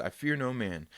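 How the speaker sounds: normal talking voice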